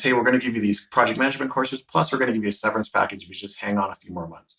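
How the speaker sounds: plain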